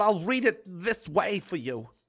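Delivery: irritating, affected, annoying put-on reading voice. Asked by a listener to read a quote aloud, in an annoying voice. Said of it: "that's an annoying voice".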